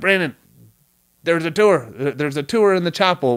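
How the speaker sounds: put-on Vietnamese-accented voice. Retelling how a buddy Rocky told him about a tour: imitating Rocky's Vietnamese accent. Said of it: "I'm saying that voice 'cause the third guy was my buddy Rocky".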